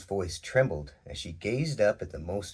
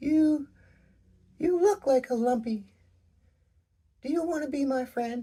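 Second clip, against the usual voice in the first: very high-pitched voice; 4 dB louder than usual. Reading a story aloud, a character speaks to a new friend: higher-pitched voice. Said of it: "Her voice got higher".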